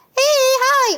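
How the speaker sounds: very high squeaky voice, second word drawn out. A speaker demonstrates how voices change around strangers, squeaky voice. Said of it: "that squeaky".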